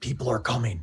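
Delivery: hushed half-whisper in an acted voice. In a role-play, a character ducks around a corner and warns Kaldrim, half-whispering in character. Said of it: "I whisper out to Kaldrim".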